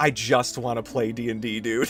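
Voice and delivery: sunken, deflated, withdrawn, shrunk-into-himself voice. Retelling how a friend looked across the table: imitating a sunken, withdrawn friend. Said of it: "sunken into himself".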